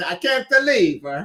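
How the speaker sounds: put-on slight hint of an Italian accent. Repeating a phrase aloud, the speaker says it almost in an Italian accent. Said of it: "Almost like an a, a Italian accent".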